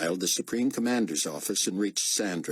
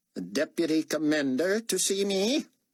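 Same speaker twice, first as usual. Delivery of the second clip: shrill, nasal voice at very high pitch; 9 semitones higher than usual. A strange voice over the intercom asks about the deputy commander, high-pitched nasal voice. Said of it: "It was high-pitched and nasal".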